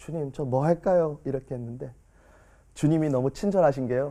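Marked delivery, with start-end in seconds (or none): 0.0-1.2 limp, weak, drained voice, strength gone. Retelling a final prayer after years: acting out a drained, weak voice. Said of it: "약간 부르짖는 것도 아니고 힘 빠진 목소리로".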